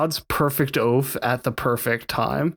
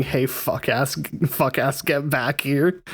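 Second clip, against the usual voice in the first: ordinary talk, nothing marked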